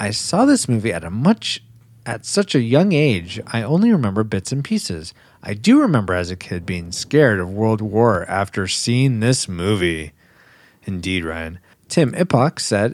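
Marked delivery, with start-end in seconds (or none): none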